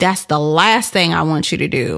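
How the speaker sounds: ordinary delivery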